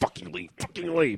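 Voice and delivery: impatient, urging mutter under the breath. Retelling waiting for people to leave the lot: retelling an impatient inner plea. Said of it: "I'm like".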